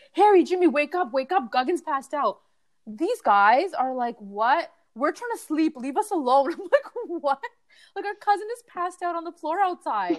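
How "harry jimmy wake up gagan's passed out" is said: frantic, urgent scream. Retelling waking the brothers after a cousin passed out, retelling a scream. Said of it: "I scream and I'm like".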